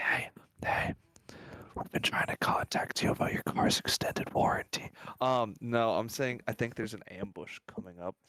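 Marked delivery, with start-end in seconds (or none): 0.0-4.9 hushed, breathy whisper. Going over to the side, the speaker whispers to everyone. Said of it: "I'm just gonna whisper to everyone".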